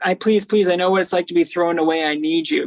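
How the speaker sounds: put-on begging, pleading voice. Retelling a movie scene where Harry goes to see Electro: imitating Harry begging. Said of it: "he's begging you".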